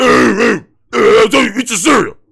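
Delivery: harsh, nasty, rough, grunting barking voice. Mocking how someone barks at them at home: imitating a nasty barking voice. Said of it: "And it's this nasty voice".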